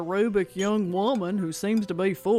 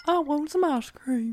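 high, piping voice like a talking toy doll; 7 semitones higher than usual. At a pretend tea party, told to do the doll's voice. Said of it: "Do the doll's voice".

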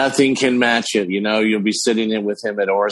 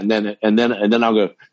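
normal talking voice

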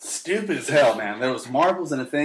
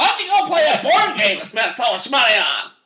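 acted-out yelling, higher and louder; 9 semitones higher, 6 dB louder than usual. Retelling how mom answered bored kids: imitating mom yelling. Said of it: "My mom used to yell at us all the time".

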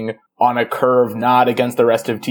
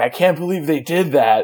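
put-on worked-up, fired-up, excited yelling outburst; 4 semitones higher than usual. Telling how friends watched her react to a new title sequence, retelling excited yelling. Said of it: "because I just kept yelling".

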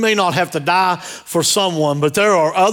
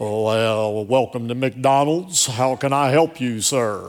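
deep, slow, well drawn-out radio-announcer delivery; 6 semitones lower, 4 dB quieter than usual. Retelling how a fast food worker greets customers, imitating his radio voice. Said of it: "He got a radio voice".

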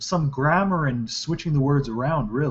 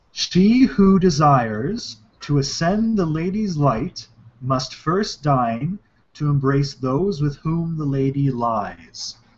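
ordinary talk

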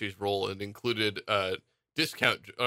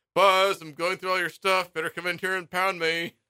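put-on, very high, loud sarcastic taunting shout; 9 semitones higher, 5 dB louder than usual. Retelling how he sarcastically yells out to buzz, mock-sarcastic yelling. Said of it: "he's like sarcastically like yelling out like".

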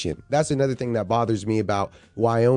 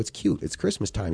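tiniest, breathy, mousy whisper; 2 semitones lower, 6 dB quieter than usual. Retelling a woman's answer to a courtroom question, tiniest mousy voice. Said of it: "tiniest mousy voice in the world".

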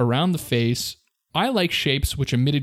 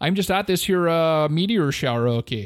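put-on Canadian accent, higher pitch; 3 semitones higher than usual. Mocking a man who claimed to be National Guard at a meteor shower, mock Canadian accent. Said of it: "I don't know why he has this accent".

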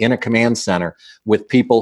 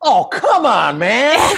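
very high, very slow, swooping, laughing voice. Retelling a player's reply after a missed call: imitating someone laughing. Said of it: "and he's laughing".

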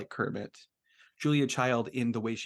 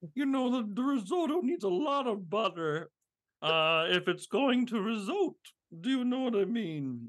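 very high-pitched, fully put-on voice; 10 semitones higher than usual. Cooking talk about butter in risotto: Julia Child impression. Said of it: "that is a good impression".

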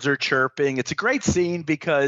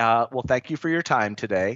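put-on deadpan calm, much lower; 3 semitones lower than usual. Discussing the film's cast and quoting the consigliere, deadpan Tom Hagen impression. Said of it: "He's deadpan".

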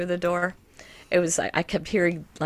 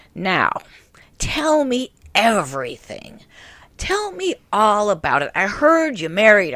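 put-on loud, slow, gravelly old woman voice; 3 semitones higher, 6 dB louder than usual. Retelling what she said as she leaned in, imitating her gravelly voice. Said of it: "this really like gravelly voice".

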